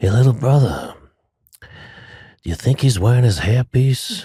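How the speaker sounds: put-on whisper. Retelling a remark whispered beside a closed casket at a funeral: imitating a whisper. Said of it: "whispers to me".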